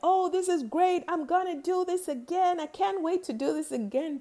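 high, excited yell. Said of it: "I just yelled stuff like".

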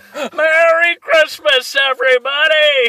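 weak put-on voice, very high and very loud. Doing a weak impression for the others: Jimmy Stewart impression. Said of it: "my weak attempt at a Jimmy Stewart".

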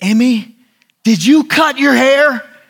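put-on high, shrill scream. Retelling the wife discovering Emmy cut her hair: imitating Christy screaming. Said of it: "and Christy screams".

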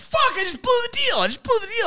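play-acted, high, shrill, frantic screaming. Retelling a morning phone call about a car: imitating someone screaming. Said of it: "screaming at me on the phone".

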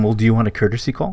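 normal talking voice

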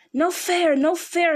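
creature voice, hissing slow, high, loud and shrill. Reading a story aloud, Gollum protests Bilbo's riddle, in a hissing Gollum voice. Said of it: "he hissed".

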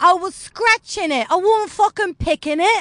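clumsy put-on Geordie accent, high and loud. Retelling a joke about a stranger yelling on the street, in a bad geordie accent. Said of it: "what's the Celia joke where she's like".

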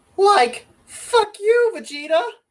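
very high, very loud, very slow cartoon stoner drawl. Challenged to try an impression, he gives it a go: Shaggy impression. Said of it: "I think I could do a Shaggy impression".

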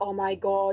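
put-on passive-aggressive mutter under the breath. Retelling how they complain about slow walkers: imitating a passive-aggressive mutter. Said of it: "I'll be passive aggressive, like, under my breath".

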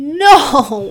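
horrified shout, high-pitched and loud.

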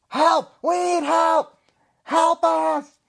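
very high, very loud, shrill screeching goblin cry. Describing the goblin voices, one goblin shouts out into the woods: goblin shouting for help. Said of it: "the one goblin that's shouting is shouting out into the woods".

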